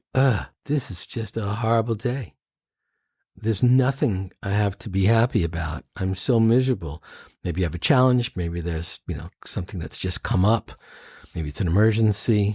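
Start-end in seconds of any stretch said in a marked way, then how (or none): none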